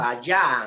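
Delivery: vayan, stressed on the syllable ya. Spanish reading practice with a student, stress on ya in vayan. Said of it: "el acento está obviamente ahí en ya".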